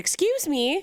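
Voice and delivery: very high-pitched, aggressive, confrontational tone. Retelling confronting a neighbour over trash: retelling an aggressive "excuse me". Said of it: "Really aggressively like that?".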